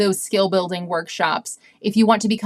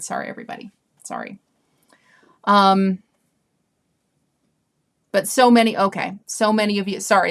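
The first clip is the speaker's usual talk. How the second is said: voice catching, choked up, halting, fighting back tears. Apologizing to everybody after reading a comment from Dana, choked up. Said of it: "choked me up a little bit".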